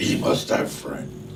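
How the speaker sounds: gruff, slow, low growling voice.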